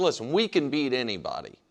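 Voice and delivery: ordinary talk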